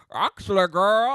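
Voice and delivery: very loud, emphatic, high-pitched delivery. Playing a backstage historian who knows the gossip: Willem impression. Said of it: "I feel like Willem".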